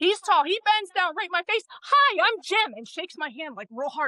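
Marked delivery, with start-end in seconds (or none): 1.7-2.7 big, animated, loud, pitched-up delivery. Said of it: "just as animated".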